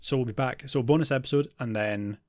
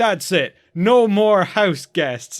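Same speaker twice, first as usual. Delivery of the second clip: put-on loud, slurring drunken voice, words smeared together; 8 semitones higher, 11 dB louder than usual. Retelling a Frasier scene as Martin stumbles back to bed, imitating Martin slurring his words. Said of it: "just completely slurring his words".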